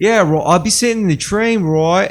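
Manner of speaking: put-on failed Australian accent, pitched very high. Quoting an Australian's remark about trains, attempted Australian accent. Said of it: "I can't even do the Australian accent".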